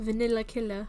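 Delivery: put-on British accent and pronunciation. Trying a name the British way, in a British accent. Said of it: "If you say it in a British accent".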